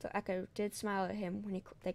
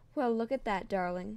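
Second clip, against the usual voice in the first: chuckling, somewhat louder; 7 dB louder than usual. Narrator reading a wife speaking to her husband about the baby, chuckling.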